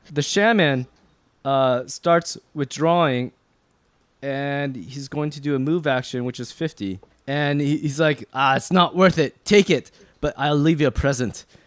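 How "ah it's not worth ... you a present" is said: put-on fantasy dwarf accent with Scottish ring. Voicing a shaman withdrawing from the fight: dwarven accent. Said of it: "I'm using my dwarven accent right now".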